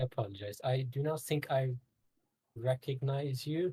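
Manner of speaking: puzzled, confused, mechanical robotic voice. Playing a sentinel who doesn't recognize a visitor, confused robotic voice. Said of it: "in a very confused, robotic voice".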